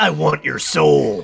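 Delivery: hellish demonic voice, rough, creaky and raspy. Suggesting a tiny bird that speaks in a demonic voice. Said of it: "give her a demonic voice".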